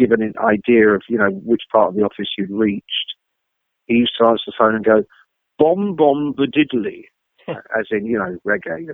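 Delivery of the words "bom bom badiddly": very middle-class English accent, said mockingly. Retelling how an english guy at the office answered the phone, in a mocking middle-class accent. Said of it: "mockingly, with this very middle class accent".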